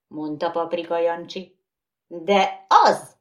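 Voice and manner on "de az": loud shouting. One character shouts back, insisting, during an argument over a riddle, shouted. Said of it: "kiáltotta Mumus".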